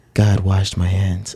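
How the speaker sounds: slow, serene, holy-sounding voice. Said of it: "make Jesus' voice sound like that".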